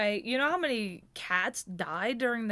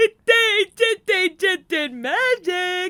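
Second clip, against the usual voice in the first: put-on very high, loud, childish little-kid voice; 10 semitones higher, 6 dB louder than usual. Recalling reacting as a kid to a faked cat throw, imitating own childhood self. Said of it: "I was probably like picking my nose and shit going".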